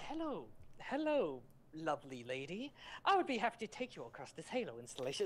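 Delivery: robotic sci-fi AI machine voice. Showing the AI voice used in the speaker's Machinima: AI voice. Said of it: "I voice A I, and I'm just like".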